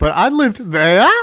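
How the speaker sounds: voice cracking and breaking. Fans gushing about a character, quoting his first line, imitating his voice cracking. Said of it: "Like his voice cracks".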